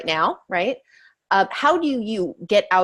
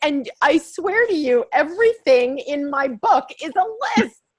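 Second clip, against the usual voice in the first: choked up, overly emotional, higher pitch; 9 semitones higher than usual. Reacting to another speaker's remark about lists: overly emotional. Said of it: "I'm over emotional on that one".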